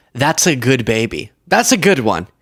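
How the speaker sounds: ordinary delivery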